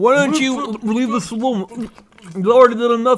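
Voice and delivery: speaking with a full mouth. Showing how the other speaker's line really sounded: imitating talking into a donut. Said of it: "You were talking into your donut".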